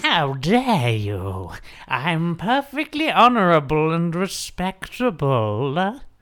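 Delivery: eerie, creepy elf creature voice. Playing the elf creature in a horror-themed D&D campaign, elf creature voice. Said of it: "that is the voice of the elf creature".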